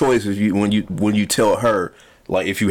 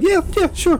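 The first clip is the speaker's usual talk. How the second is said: mock higher-pitched, higher-octave voice. Imitating another speaker's unconvincing agreement: imitating his higher-pitched voice. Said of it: "the higher octave in his voice makes me believe that he's gonna be like".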